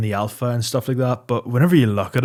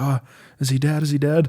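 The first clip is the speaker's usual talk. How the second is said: play-acted tearful sobbing through every word; 4 semitones higher than usual. Retelling a video where a passenger asks if a man is dead: imitating a sobbing girl. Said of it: "the girl in the passenger seat is sobbing".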